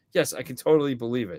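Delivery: ordinary talk, nothing marked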